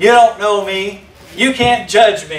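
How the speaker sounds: playfully sarcastic, tongue in cheek. Quoting a line people often say: imitating a sarcastic quote. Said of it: "not in seriousness but in sarcasm".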